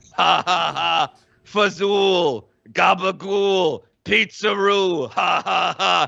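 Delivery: very slow, low, stretched-out bot laughter. Voicing the Fauci bots laughing at a player: voicing the Fauci bots. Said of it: "All of the Fauci bots start going like".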